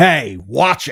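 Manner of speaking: put-on grating New Jersey accent. Retelling the dad's snappy retort, in his accent: grating New Jersey-ish accent. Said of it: "he has this this grating accent".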